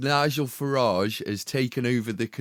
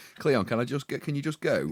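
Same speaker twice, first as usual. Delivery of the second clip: acted-out frantic, rushed, panicked begging tone; 2 semitones higher than usual. Retelling how the other speaker sounded last week: imitating a panicked plea. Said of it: "I could hear the panic in your voice".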